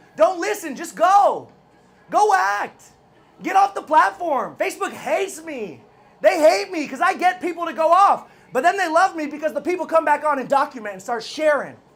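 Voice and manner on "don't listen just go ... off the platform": forceful, high-pitched, emphatic delivery. Speaking to the audience, yelling at them. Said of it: "I'm yelling at you".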